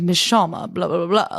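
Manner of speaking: low debonair voice. Speaker compares an actor's voice across two roles, low Jonathan Bailey voice. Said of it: "he's like down here".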